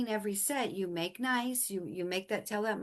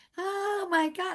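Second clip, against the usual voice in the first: shrill pained scream, very high and loud; 10 semitones higher, 5 dB louder than usual. Retelling a mother's reaction to a hip stretch, imitating mom screaming and crying. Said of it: "she's screaming and crying".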